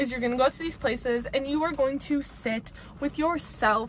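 ordinary talk

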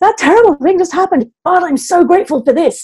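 forced through clenched teeth. Showing forced gratitude after something terrible happened, said through gritted teeth. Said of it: "through gritted teeth".

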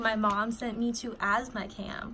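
ordinary talk

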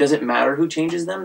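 normal talking voice

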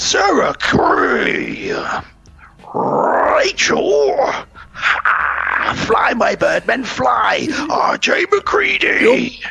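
very high, very slow, rough-edged, gravelly, each word stretched. Reading out a list of names to thank, in the style of Brian Blessed. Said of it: "in the style of Brian Blessed".

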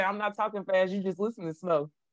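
ordinary delivery

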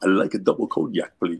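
creepy, theatrical classic movie vampire count voice. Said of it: "did the [name] voice to order a cognac".

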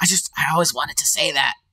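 theatrical whisper. Voicing a kobold leaning over a kneeling player: half-whispering as Meepo. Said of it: "kinda whispers to you".

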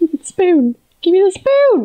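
panicking voice. Streamer short on time, struggling with a spoon in the game, panicking. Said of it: "Now I'm just panicking".

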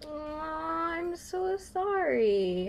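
very slow, high, drawn-out, patronizing sympathy. Consoling the other player after a bad draw: mock sympathy, incredibly patronizing. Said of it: "Also incredibly patronizing".

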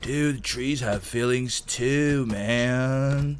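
very slow, dragged-out, laid-back hippie drawl. Chopping trees in a game, the speaker does his best hippie impression. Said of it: "That's my best hippie".

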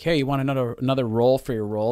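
ordinary talk

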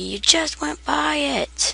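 high, slow, mock yelling. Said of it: "Guys are probably yelling at me".

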